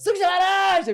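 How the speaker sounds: very high, shrill, loud shout. Retelling how a shop attendant turned around to call an order: imitating someone shouting. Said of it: "Virou pra trás gritando".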